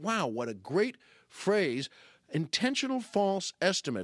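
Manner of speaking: normal talking voice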